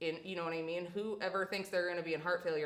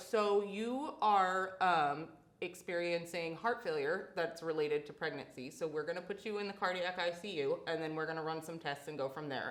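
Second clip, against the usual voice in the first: plain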